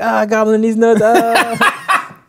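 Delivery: high, loud excited yell. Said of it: "he's like".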